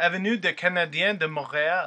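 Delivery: clumsy, butchered, put-on French accent. Reading a Montreal street name in their best French accent: put-on French accent. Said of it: "I'm going to try this in my best French accent".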